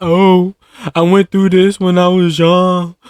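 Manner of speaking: put-on weepy crying voice, high and whiny. Mocking an ex who starts crying when caught, imitating her crying. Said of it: "she'll start crying like".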